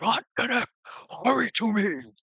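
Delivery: very high, urgent cry, calling out. Voicing a giant calling for help: crying out. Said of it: "he cries out".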